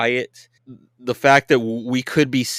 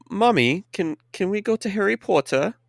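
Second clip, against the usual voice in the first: bad fake British child accent, much higher pitch; 8 semitones higher than usual. Retelling what a British kid in a ride line said to his mom, bad British child accent. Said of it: "I'm not very good at British accent".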